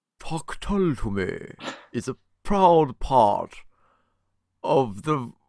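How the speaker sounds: high-pitched put-on vampire voice. Having asked a co-host to do the read like a vampire, in a vampire voice. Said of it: "can I do it like a vampire?".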